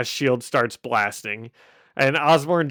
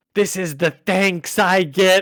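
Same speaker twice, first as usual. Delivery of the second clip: high, slow goblin character voice; 5 semitones higher than usual. Retelling a goblin fight between father and son, in Norman's goblin voice. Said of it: "they're doing goblin voices at each other".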